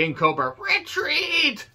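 terrible put-on voice, very high and swooping in pitch. Recapping a wrestling show, doing a terrible King Cobra voice. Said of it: "Shouldn't try to do a King Cobra voice".

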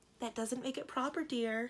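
mild, soft tone. The princess's mother puts in a word to her daughter, gently. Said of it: "put in her mother gently".

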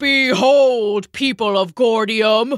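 loud, booming giant's bellow. A huge man walks into the palace square addressing the people, bellowing. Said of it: "he bellowed".

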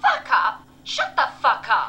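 furious yell, loud and high.

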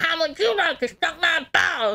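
bad, high-pitched put-on voice. Retrying a line after admitting it no longer works: failed Cartman impression. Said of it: "I can't do Cartman anymore".

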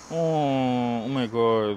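very slow, pitying sarcasm with drawn-out "oh". Reacting to hearing the other speaker was cheated on: sarcastic. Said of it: "you sound so sarcastic".

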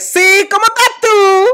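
very loud, very high-pitched shout. Describing how Spanish people talk on the phone, the speaker demonstrates it very loud. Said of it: "Sorry if you're listening on headphones".

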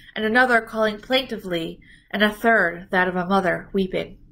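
ordinary delivery, nothing marked

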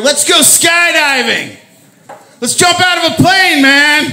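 crazy, shrieking, very high wild scream. Acting out the crazy inner voice screaming in the ear: imitating a screaming crazy voice. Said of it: "the crazy voice over here screaming in my ear".

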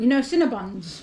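chewing while speaking, mouth stuffed full. Tasting a pastry with another speaker: talking with mouth full. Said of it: "as my mouth is full like a hamster".

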